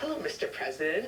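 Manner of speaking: ordinary talk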